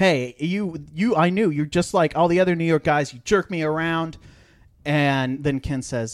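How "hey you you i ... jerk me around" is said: acted, loud, accusing yell. Retelling an angry outburst during a business deal: imitating someone yelling. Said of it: "Ross starts yelling at him".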